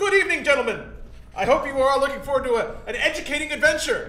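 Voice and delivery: haughty, bookish, pompous voice, slightly high. Voicing a character who rolls up to the group: pompous scholar character voice.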